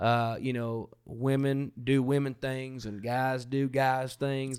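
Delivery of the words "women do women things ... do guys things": put-on Southern American accent. Describing a traditional view of women in ministry, in a put-on Southern accent. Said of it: "you're giving it a Southern accent".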